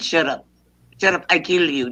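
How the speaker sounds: put-on Irish accent. Putting on an accent in a group conversation: irish accent. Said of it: "in my Irish accent".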